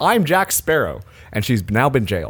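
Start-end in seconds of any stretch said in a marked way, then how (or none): none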